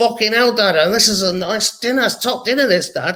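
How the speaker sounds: put-on Mancunian Manchester accent. A father imitates his daughter talking to him at dinner, bit of a Mancunian accent. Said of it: "got like a bit of a Mancunian accent".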